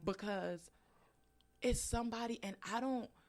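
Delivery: high voice, emotion welling up, barely held back. An author discussing what they went through in their book, getting emotional. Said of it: "I'm sorry, I get emotional quick".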